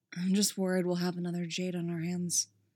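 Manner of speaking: almost inaudible. A man finishes his sentence, barely audible. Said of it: "barely audible".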